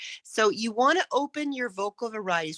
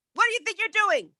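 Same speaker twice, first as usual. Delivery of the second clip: shrill, loud, very high-pitched yelling bully voice; 3 semitones lower, 5 dB louder than usual. A speaker demonstrates how a bully yells at someone, loud yelling bully voice. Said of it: "maybe it would be a loud voice because they're yelling at you".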